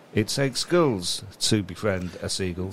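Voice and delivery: plain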